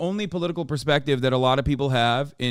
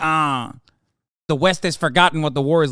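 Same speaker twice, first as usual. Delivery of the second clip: mock sneering nerd voice, louder; 3 semitones higher, 5 dB louder than usual. Mocking a commentator he hates: mocking a slimy nerd. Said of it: "slimy little fucking creature nerd being like".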